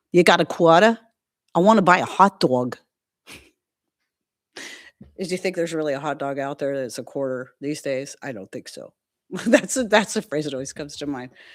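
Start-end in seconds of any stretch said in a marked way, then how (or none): 0.1-2.7 put-on New Yorker accent. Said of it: "New Yorkers talk different than me".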